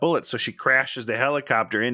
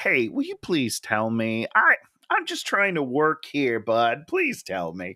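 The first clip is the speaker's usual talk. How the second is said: mock mild, calm, polite nice-guy voice, sing-song. Retelling how the chairman asks for information: imitating a calm, nice guy. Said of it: "a really nice, calm guy".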